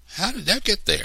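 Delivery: rushed, high-pitched exclamation. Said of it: "I exclaimed".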